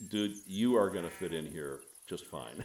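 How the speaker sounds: ordinary delivery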